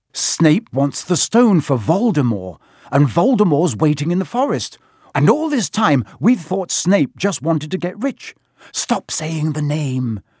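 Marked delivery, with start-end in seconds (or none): 8.8-10.2 terrified, frightened whisper, slower. Reading a story where one character begs another to stop, in a terrified whisper. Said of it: "said Ron in a terrified whisper".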